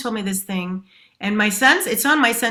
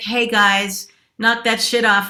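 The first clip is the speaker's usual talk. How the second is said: put-on bitchy, snarky sarcastic tone. Showing how a talk could scold people: put-on bitchy sarcastic tone. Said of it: "bitchy, sarcastic".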